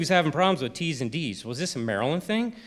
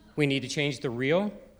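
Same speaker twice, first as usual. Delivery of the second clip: upspeak with pitch lifting at the end of reel. Imitating a man whose every sentence went up: pitch rising at the end on reel. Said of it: "He would talk like this, where everything he said went up at the end".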